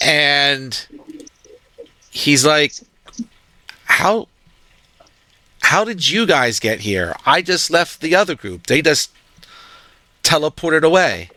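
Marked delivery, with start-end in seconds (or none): 3.8-11.2 a bit shocked, taken aback, caught off guard. A game master voicing the party's boss walking out of the inn, a bit shocked. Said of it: "looks at you all a bit shocked".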